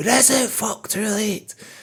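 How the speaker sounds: play-acted very high-pitched yelled outburst. Recalling a favourite film moment: imitating Gary Lewis shouting. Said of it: "Gary Lewis shouting".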